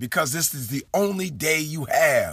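ordinary talk

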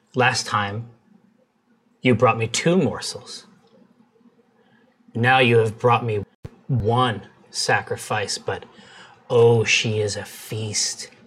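eerie, scary, disembodied creature voice from everywhere at once. Voicing an unseen being that speaks to the players: scary unseen creature voice. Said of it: "a voice that seems to come at once from the top and bottom".

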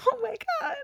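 high, tearful crying.

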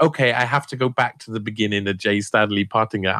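ordinary delivery

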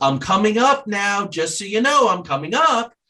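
mock, shrill, very high yelled call. Retelling a story about a seven-year-old grandson: imitating a yell. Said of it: "and he yells".

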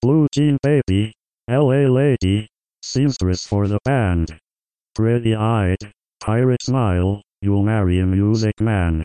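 awkward, clunky, low-resolution robotic computer voice. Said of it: "low-resolution computer voice".

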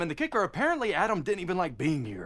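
ordinary talk

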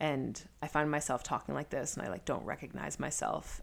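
low vocal fry. Describing how they talk when nervous, in a low, pitched-down voice. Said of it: "I pitch my voice down ... like this voice here ... which is the vocal fry".

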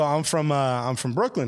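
normal talking voice

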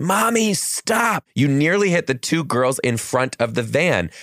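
put-on high, yelled child's voice.

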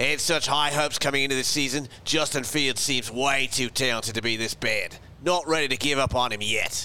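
read aloud in an Australian accent. Reading a listener's message aloud on the show, australian accent. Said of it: "You should read this in an accent then".

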